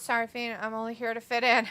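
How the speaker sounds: plain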